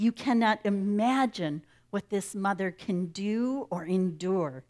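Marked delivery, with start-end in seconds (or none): none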